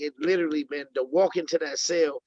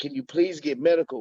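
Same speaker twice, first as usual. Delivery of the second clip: mock pleading tone. Telling of his cell, the speaker quotes the guys next to him begging the COs. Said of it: "The guys next to me are begging the C Os".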